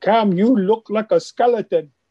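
put-on speaking in a French accent. Retelling what teammates said in the dressing room: French accent. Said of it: "they have their French accent and they go".

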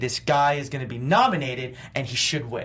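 ordinary delivery

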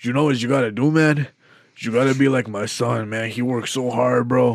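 put-on drunk voice, slurred and loose. Retelling what a drunk regular always said: imitating a drunk coworker Franco. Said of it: "when I was doing that impression".

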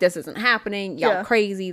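mock dismissive, laughing it off. Retelling how Joe brushed off the haunting: imitating someone laughing it off. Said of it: "kind of been laughing it off".

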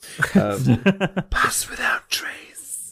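eerie, creepy whispered voice. Naming the spell pass without trace during play: creepy voice. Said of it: "that's the creepy voice".

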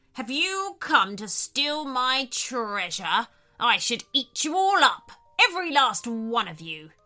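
threatening, menacing, growling shark predator voice. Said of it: "growled a voice from behind them".

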